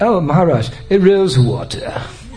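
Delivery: put-on wide-pitched British English accent, children's style.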